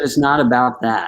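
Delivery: ordinary delivery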